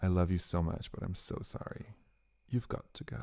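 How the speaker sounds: breathy whisper, apologetic yet firm. Retelling turning people away at a tent entrance: retelling bouncer voice. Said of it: "It's the voice".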